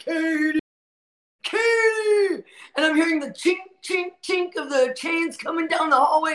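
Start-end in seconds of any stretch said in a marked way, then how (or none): 0.0-2.4 high, drawn-out calling shout. Retelling a woman brought to lockdown calling out her name, retelling a shouted name. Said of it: "she shouts, shouting my name".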